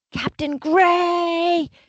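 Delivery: high screaming call, stretched long and drawn out. Retelling a commander calling from down the hallway: imitating a commander screaming. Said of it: "And I hear this screaming".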